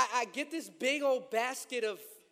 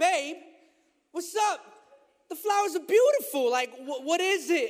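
mock mildly irritated, pressing, raised and pitched up; 5 semitones higher, 7 dB louder than usual. Retelling asking his wife about the flowers, imitating own aggravated tone. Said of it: "so I kinda get a little aggravated".

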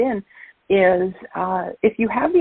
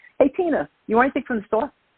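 exaggerated, thick, turned-up Brooklyn accent; 4 semitones higher than usual. Demonstrating how people in brooklyn talk: turned-up brooklyn accent. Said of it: "but I could turn it up".

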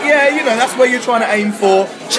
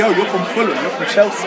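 ordinary talk

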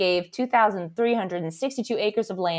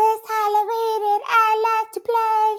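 put-on tiny, creepy, very high ghost boy voice; 13 semitones higher, 3 dB louder than usual. Describing a little boy ghost who wants to play, voicing him, little boy ghost voice. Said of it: "If that voice comes out of a ghost".

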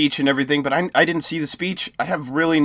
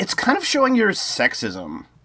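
put-on smug, know-it-all, sing-song tone; 5 semitones higher than usual. Trying out how she sounded, mock-smug I-told-you-so tone. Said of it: "It's got this very, like, I told you so kind of tone to it".

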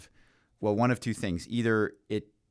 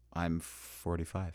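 radio announcer voice, much lower, quieter; 3 semitones lower, 8 dB quieter than usual. Answering when asked their age, slipping into a radio voice. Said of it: "You went to Radio Voice when you said that".

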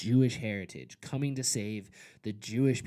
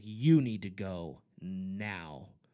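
mock-angry, lower and slower; 3 semitones lower than usual. Retelling ordering a man who cursed at the speaker to leave: retelling own angry warning. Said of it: "I was so mad".

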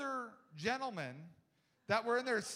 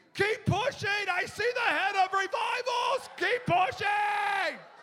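shrill, very high, full-volume scream; 10 semitones higher, 10 dB louder than usual. Retelling men at a meeting who screamed to others: imitating men screaming. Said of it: "they're screaming".

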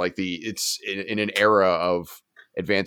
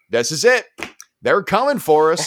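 put-on raised, high, typical Montana accent; 9 semitones higher, 5 dB louder than usual. Describing how other people would react, in the typical Montana accent you've been practicing. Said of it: "in that typical Montana accent that I've been practicing".

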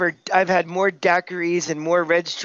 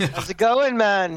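awful put-on Jamaican accent; 2 semitones higher than usual. Greeting the host from Jamaica: awful Jamaican accent impression. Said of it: "That's the awful impression".

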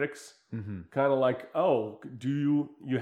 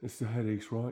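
put-on English actor voice, quieter; 2 semitones lower, 8 dB quieter than usual. Quoting a movie scene where a character gets shot: Clive Owen impression. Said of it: "That's my Clive Owen impression".

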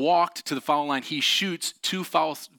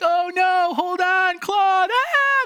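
very high, very slow, drawn-out, loud scream; 6 dB louder than usual. Retelling how the sisters screamed from the tree: imitating sisters screaming. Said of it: "they're screaming like".

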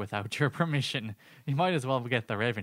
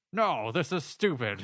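thoroughly unwilling, reluctant tone; 3 semitones higher than usual. Describing a Muppets scene with the band, mock-reluctant Sam the Eagle voice. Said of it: "Sam the Eagle is extremely reluctant".

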